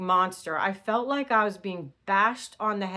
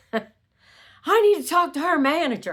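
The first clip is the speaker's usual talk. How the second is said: put-on yell, higher and louder; 8 semitones higher, 7 dB louder than usual. Retelling the customer yelling at the manager: imitating a man yelling. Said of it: "this guy started yelling at him".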